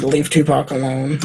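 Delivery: ordinary delivery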